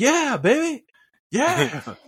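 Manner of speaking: shrill, very high-pitched, loud whooping cheer. Retelling a daughter cheering in the theater: imitating Sayla cheering loudly. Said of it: "She was a she was the loudest one in the whole theater".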